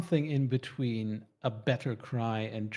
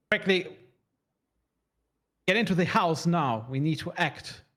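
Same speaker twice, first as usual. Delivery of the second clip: loud, high-pitched barking delivery; 6 semitones higher, 5 dB louder than usual. Running the game, the narrator voices Mother Cecilia in her barking voice. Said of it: "the barking voice of Mother Cecilia".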